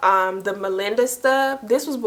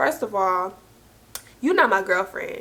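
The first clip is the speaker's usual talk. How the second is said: put-on blunt, straight, flat delivery. Retelling a man's reply on the phone: imitating a blunt, straight delivery. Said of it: "Straight like that".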